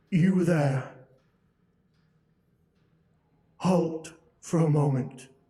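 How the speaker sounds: loud, growling creature voice. Game master voicing a creature speaking to the players, growling creature voice. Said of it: "it growls out".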